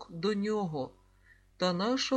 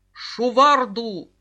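barked, much louder; 12 dB louder than usual. Reading a story aloud, a character's one-word shout at the group: barked. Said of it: "гаркнув Груміядз".

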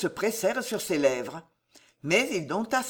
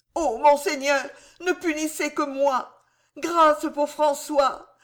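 stammering and distraught, much higher pitch; 7 semitones higher than usual. A distraught man losing his reason pleads with his lord, stammering, distraught. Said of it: "balbutia l'infortuné, dont la raison vraiment s'égarait".

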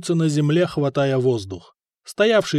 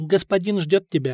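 usual speaking voice

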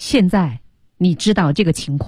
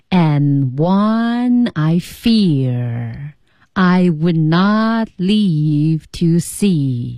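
slow, measured, deliberate, unhurried, with fear drawn out. Slowly demonstrating an English line for everyone: slow pace. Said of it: "我给大家慢慢演示一遍哈".

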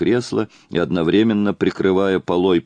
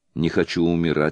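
plain

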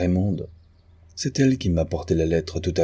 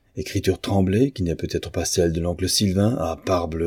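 plain reading voice

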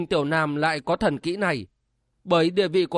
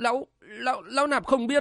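stammering, stuttering in a much higher pitch; 6 semitones higher, 3 dB quieter than usual. A monk, questioned about where the abbot is secluded, answers stammering. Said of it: "lắp bắp".

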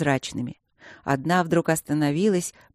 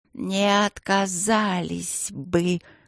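hissing voice full of pleasure and relish; 3 semitones higher than usual. A narrator voices a young guardian girl answering a question, hissing with relish. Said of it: "прошипела девочка с наслаждением".

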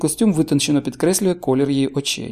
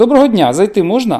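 raised, irritated, snapped out; 5 semitones higher, 6 dB louder than usual. A woman at the door asks to come in, irritably snapped. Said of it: "роздратовано кидає жінка".

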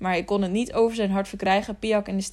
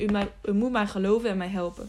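plain

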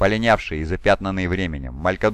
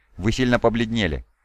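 ordinary delivery

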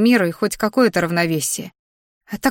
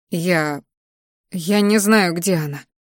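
quiet and soft, much slower; 2 semitones lower than usual. A woman answers a sobbing girl asking where her friend is, quietly spoken. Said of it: "тихо произнесла".

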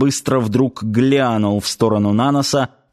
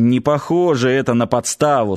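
usual speaking voice

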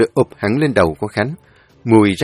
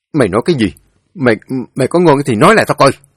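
furious, through gritted teeth, louder, higher; 3 semitones higher, 4 dB louder than usual. Khánh grabs Thắng's collar and confronts him, furious, through gritted teeth. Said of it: "tức tối kéo cổ áo Thắng rồi gằn giọng".

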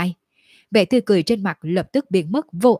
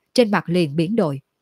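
plain reading voice

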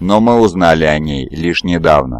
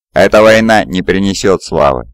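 plain

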